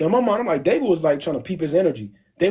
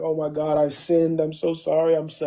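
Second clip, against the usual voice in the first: put-on crying voice. Retelling a Bible story, voicing David as he tears his clothes: imitating someone crying. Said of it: "He tore his clothes and he's crying".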